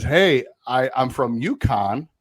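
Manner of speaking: put-on Rhode Island accent. Retelling a UConn man introducing himself, Pete Belisle's Rhode Island accent. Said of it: "in his Rhode Island accent".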